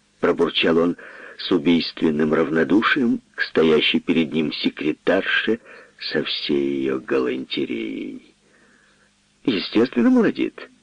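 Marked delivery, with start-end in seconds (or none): 9.4-10.7 very high-pitched, scoffing, mocking cry. The secretary answers the lawyer's question: mocking exclamation. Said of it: "воскликнула Жужа насмешливо".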